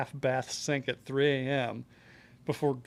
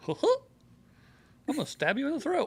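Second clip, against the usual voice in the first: very high, swooping, squeaky voice; 12 semitones higher than usual. Playing the would-be murderer from a dating site, in a Mickey Mouse voice. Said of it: "It's Mickey Mouse, but okay".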